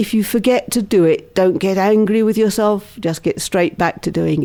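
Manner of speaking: plain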